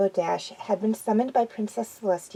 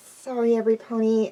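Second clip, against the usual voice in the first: small, shy, meek, timid voice. She apologizes to her friends for spacing out, speaking meekly. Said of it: "she said meekly".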